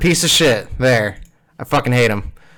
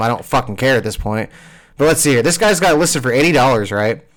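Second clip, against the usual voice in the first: ordinary delivery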